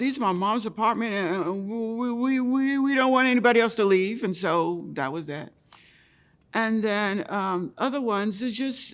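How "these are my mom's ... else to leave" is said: put-on stutter and stammer, louder and higher. Speaker recounting someone turning him away from an apartment, imitating a stutter. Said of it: "Another one stuttered and said".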